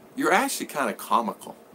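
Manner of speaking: ordinary talk, nothing marked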